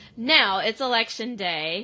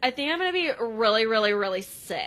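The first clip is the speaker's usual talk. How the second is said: ordinary delivery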